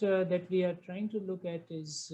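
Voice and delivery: normal talking voice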